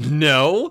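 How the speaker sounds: very loud, high, obnoxious, drawn-out "no". Retelling refusing the mother a piece of chocolate: imitating own obnoxious "no". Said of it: "Just very obnoxiously".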